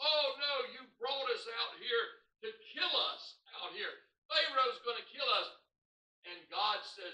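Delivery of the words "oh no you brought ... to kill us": acted-out scream. Retelling the Israelites trapped at the Red Sea, acting out their screaming. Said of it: "they were all screaming".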